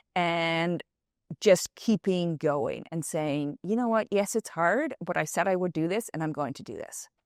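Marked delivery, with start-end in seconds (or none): none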